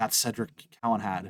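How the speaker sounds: soft, hushed half-whisper. Voicing a half elf who half-whispers back into a wagon: half-whispering. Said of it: "whispers back into the, into the wagon".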